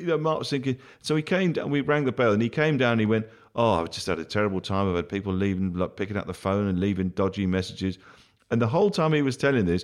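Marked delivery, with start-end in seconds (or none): none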